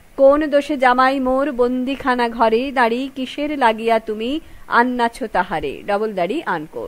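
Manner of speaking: ordinary talk, nothing marked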